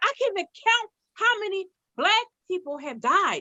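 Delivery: angry fed-up rant. Retelling what an outraged man said online: imitating an outraged man. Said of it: "he was outraged, and you can hear it in his voice".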